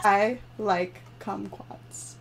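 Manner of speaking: slow and quiet. Repeating a phrase in a guessing game after being asked to, said slowly. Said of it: "say it slower!".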